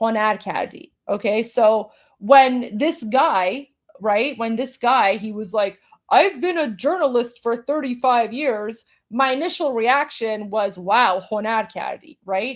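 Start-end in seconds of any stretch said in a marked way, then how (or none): 10.8-12.2 mock dry, ironic sarcasm. Recalling a reaction to a journalist's boast: sarcastic tone. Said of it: "Because I'm saying it sarcastically".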